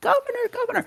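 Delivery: shrill, very high shrieking scream. Game narrator voicing townsfolk as they run into the old town: screaming townsfolk. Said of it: "They start screaming".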